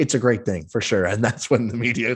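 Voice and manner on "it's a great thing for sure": thick, overt, heavy sarcasm. Retelling an answer given at a media conference: imitating a very sarcastic reply. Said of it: "says very sarcastically".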